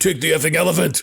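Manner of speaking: harsh, grating, rough, creaky raspy voice. Retelling a movie scene where Darkman snaps at his girlfriend: Darkman voice. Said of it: "He immediately slips into his Darkman voice".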